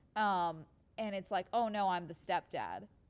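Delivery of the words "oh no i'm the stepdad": put-on calm, casual tone. Retelling body cam footage of a man lying to police: imitating a calm, casual liar. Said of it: "the guy is so calm and casual explaining his fucking lie".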